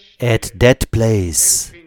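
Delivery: said slowly and deliberately, emphasis on "that". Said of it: "let me say this slowly and advisedly".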